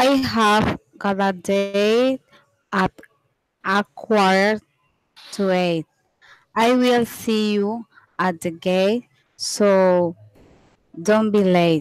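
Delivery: reading slowly. A student reads a practice rhyme slowly as the teacher asked, slow reading. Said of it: "read it slow".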